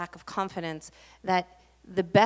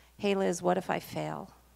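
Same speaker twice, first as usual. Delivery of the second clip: softly spoken in a soft voice. Recalling a classmate's heartfelt question to her, the speaker is retelling a soft-voiced question. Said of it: "in a soft voice says".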